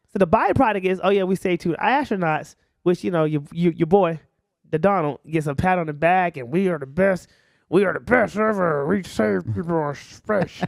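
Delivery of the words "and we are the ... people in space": half-hearted, unconvincing boastful voice, zero effort. Imitating a politician bragging: worst Donald Trump impersonation. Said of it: "the worst Donald Trump impersonation".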